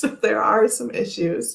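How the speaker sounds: laughing while talking. Reading viewer comments on a video, laughing while talking. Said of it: "I just can't stop laughing".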